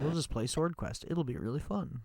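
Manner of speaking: play-acted sarcasm, quiet and low-key. A gamer mid-play retelling his own earlier words, retelling a sarcastic remark. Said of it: "He said sarcastically".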